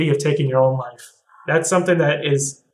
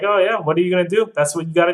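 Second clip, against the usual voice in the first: chuckling, breezy, offhand laughing brush-off; 3 semitones higher than usual. Retelling how grandpa reacted while telling a grim family story, imitating grandpa laughing it off. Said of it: "He's just like laughing about it".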